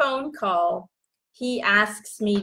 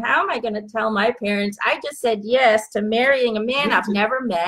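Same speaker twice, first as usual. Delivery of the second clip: ordinary talk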